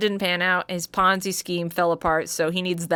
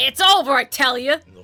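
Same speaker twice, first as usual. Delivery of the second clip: put-on New York accent, higher and louder; 7 semitones higher, 6 dB louder than usual. Voicing the defendant's breakdown in a trial: New York accent. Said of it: "doing a breakdown in a fucking New York accent".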